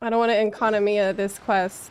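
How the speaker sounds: ordinary delivery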